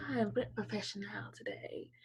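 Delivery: prim, breathy, polite telephone-manner voice. Imitating the other speaker's polite line: imitating a telephone voice. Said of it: "That's her telephone voice".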